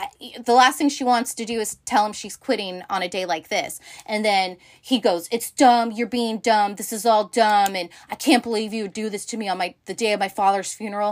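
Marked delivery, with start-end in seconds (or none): 5.3-11.1 put-on nasty voice. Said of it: "he gets really shitty with Jess".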